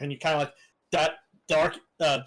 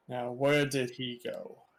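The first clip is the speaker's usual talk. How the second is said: gruff, hushed, rough-sounding voice; 2 semitones lower, 5 dB quieter than usual. A narrator voices one of the people walking by, in a gruff voice. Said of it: "in a gruff voice you hear".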